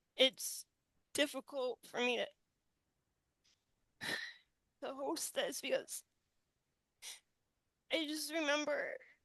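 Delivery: choked-up crying, halting, voice breaking off. Hosting the show after rewatching a clip, crying. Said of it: "I just can't stop myself right now from crying".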